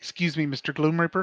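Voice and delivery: quiet, hushed, polite delivery. A player's character walks up to address Mister Gloom Reaper, speaking quietly.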